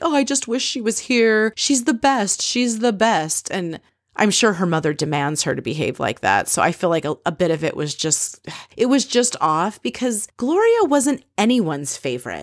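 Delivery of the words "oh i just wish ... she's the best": put-on, high, weepy, blubbering sobbing voice. Retelling a tv clip of someone getting emotional: imitating someone crying. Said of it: "crying and she's like".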